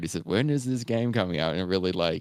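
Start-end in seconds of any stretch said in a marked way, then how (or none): 0.2-1.5 put-on comic, funny elderly man's voice. Retelling an old man in a game trailer asking about release: imitating an old man's funny voice. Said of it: "really funny voice".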